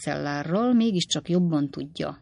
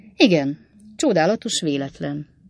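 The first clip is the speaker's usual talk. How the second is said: usual speaking voice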